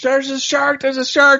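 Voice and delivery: very high, acted-out scream. Recounting a scene, the speaker acts out a woman screaming at surfers. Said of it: "she's screaming at them".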